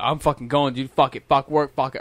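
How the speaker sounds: usual speaking voice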